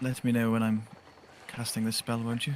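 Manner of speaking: hushed stage whisper. The narrator voices Delisa half-whispering into Scotinos's ear: Delisa half-whispering. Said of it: "You hear a whisper in your ear".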